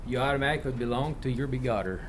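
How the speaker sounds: Southern country Arkansas accent. Talking with a co-host about a word, in an Arkansas accent. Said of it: "sound like I'm from Arkansas, don't I?".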